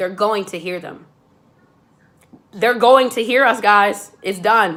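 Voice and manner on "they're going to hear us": ordinary delivery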